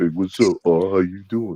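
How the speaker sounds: mocking put-on smooth voice. Mocking how Mac tries to sound all smooth: imitating Mac sounding smooth. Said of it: "he trying to sound all smooth".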